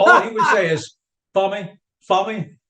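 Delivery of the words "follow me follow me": put-on heavy New Jersey accent, laid on thick. Imitating a club manager seating people: Danny McKenna's thick Jersey accent. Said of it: "such a thick Jersey accent".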